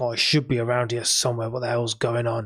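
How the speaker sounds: frustrated muttering to himself. Game master voices a character searching for a cavern entrance: frustrated muttering. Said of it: "He's just like muttering to himself".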